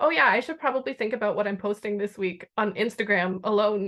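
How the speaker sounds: ordinary delivery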